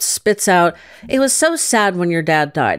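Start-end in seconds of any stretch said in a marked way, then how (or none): none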